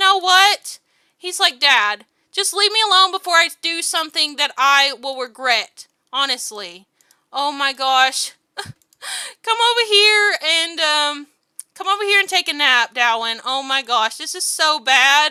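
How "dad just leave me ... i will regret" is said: acted angry, heated voice, losing patience. Speaker acts out what the mad one says to dad, mock-mad. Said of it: "He's so mad right now".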